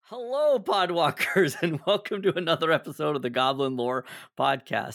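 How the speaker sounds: speaking through chuckles, laughing throughout. Opening the podcast episode after a recording mishap, laughing while talking. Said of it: "I'm laughing right now".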